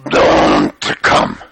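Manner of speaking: very low, creaky, gravelly Russian rasp. Retelling what the aunt said back: Aunt Lizzie's gravelly Russian voice. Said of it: "She had this real gravelly Russian voice".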